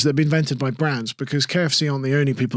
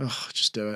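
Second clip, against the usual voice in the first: fake gloomy delivery, lower and quieter; 4 semitones lower, 10 dB quieter than usual. Saying brand slogans badly for laughs: mock depressed slogan. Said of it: "any slogan, if said badly, is suddenly really depressing".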